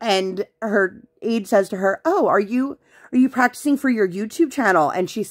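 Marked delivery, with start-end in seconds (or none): 2.0-4.9 acted-out sarcastic, needling, snarky, pitched-up tone. Retelling what an aide said at school drop-off: imitating a snarky tone. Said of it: "she said it in kind of, like, a snarky way".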